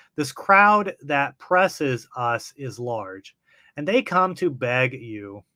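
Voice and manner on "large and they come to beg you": ordinary delivery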